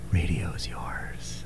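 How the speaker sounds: weird, creepy, breathy radio-style whisper, very slow. Radio host finishing a station ID, in a weird, creepy radio voice. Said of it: "I just said that in the weirdest, creepiest way".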